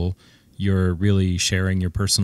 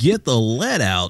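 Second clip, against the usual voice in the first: parody morning radio DJ screaming; 4 semitones higher than usual. Mocking morning drive DJs, screaming like a morning DJ. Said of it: "Start screaming".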